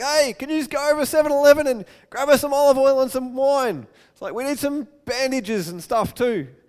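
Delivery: loud, high-pitched hollering yell. Acting out the traveler calling to his friends for supplies: acting out a yell. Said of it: "yells out to his friends".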